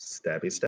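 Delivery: quiet, hushed, whispered aside. Speaking in character, leaning over to a party member: whispering. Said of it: "and I whisper".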